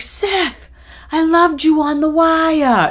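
put-on very high yell in Boston accent, one word drawn out. Mom calls out to Seth, an actor from The Wire, imitating Mom yelling in Boston accent. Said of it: "in her Boston accent".

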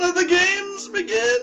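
bad put-on fire hydrant voice, very high, loud. Voicing an enraged fire hydrant in a game: terrible fire hydrant impression. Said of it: "That's a terrible impression".

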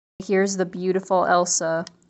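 ordinary delivery

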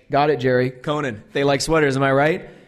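ordinary talk

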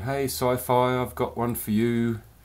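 put-on English accent. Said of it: "in her lovely little English accent".

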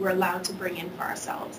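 plain

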